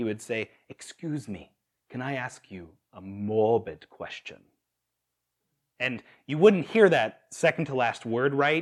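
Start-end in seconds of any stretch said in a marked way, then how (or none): 0.7-4.4 put-on Kenyan-accented polite tone. Recalling how a man would ask strangers a question: Kenyan accent. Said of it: "in that great Kenyan accent".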